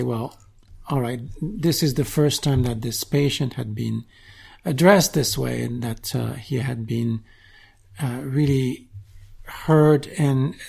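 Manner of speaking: ordinary talk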